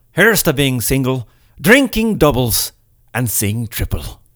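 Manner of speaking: bad, horrible put-on Irish brogue. Giving a St. Patrick's Day drinking toast, in a horrible Irish accent. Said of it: "I do a horrible Irish accent".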